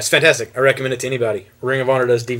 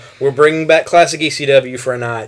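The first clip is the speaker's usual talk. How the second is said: usual speaking voice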